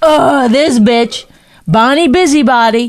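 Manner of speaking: mocking, drawn-out, put-upon annoyance. Mimicking the other speaker's reaction to being asked to do chores: mocking imitation of partner's annoyance. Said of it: "you're like".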